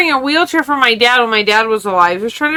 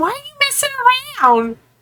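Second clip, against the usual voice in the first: put-on yelling, higher pitch; 13 semitones higher, 3 dB quieter than usual. Retelling a lady yelling at her hurt husband: imitating someone yelling. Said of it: "yelling at him".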